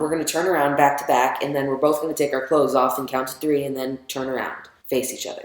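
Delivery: ordinary talk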